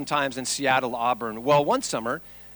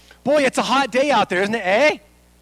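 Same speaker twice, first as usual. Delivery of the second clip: put-on Canadian accent, louder; 9 semitones higher, 6 dB louder than usual. Demonstrating how Canadians are teased about their speech, in a Canadian accent. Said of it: "that's a Canadian thing".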